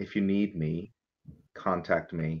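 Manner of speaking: low, soft, quiet words. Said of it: "And quietly, he's going to say".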